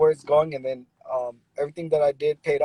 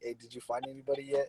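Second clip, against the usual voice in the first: put-on hushed whisper, quieter; 13 dB quieter than usual. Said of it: "I'm calling her on the low".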